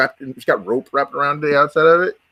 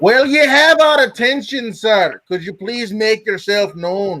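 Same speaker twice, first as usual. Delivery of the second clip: very clear voice ringing out, pitched up; 8 semitones higher than usual. [name] calls out to a presence, asking it to make itself known, very clear ringing voice. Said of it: "in a very clear voice, he rings out".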